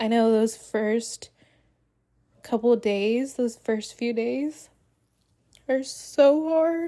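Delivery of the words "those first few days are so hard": high, slow, tearful voice, crying while talking. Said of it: "I can't stop crying when I'm talking about this".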